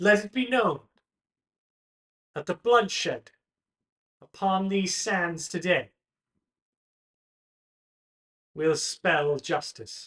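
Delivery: loud, high-ringing, magically amplified proclaiming voice. Voicing a noble proclaiming a trial to the Colosseum: magically amplified proclamation. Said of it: "amplifies her voice across the Colosseum".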